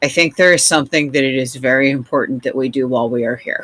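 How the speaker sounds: very serious, grave, quick delivery. As the group approaches the parking area, Lantern speaks in a very serious voice. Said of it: "Lantern does say in a very serious voice".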